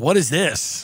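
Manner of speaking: acted, irritated, angry, confrontational, demanding outburst. Retelling how a caller came in hot on a podcast: imitating someone angry. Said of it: "Portnoy was, like, angry".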